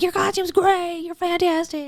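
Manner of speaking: mock, very high-pitched, screaming shout. The speaker recounts driving past people in costumes, retelling a shout from the car. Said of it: "shouting from my car while I'm driving".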